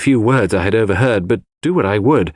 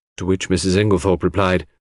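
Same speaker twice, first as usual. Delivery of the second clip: plain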